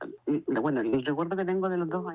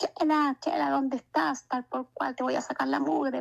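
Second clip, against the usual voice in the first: acted rough yelling, raised pitch; 9 semitones higher than usual. Recalling as a small child a father shouting for the mother, imitating father yelling. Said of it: "empezó a gritar a mi mamá".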